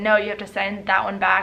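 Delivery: ordinary talk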